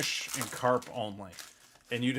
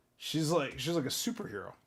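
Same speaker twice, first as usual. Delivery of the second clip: ordinary talk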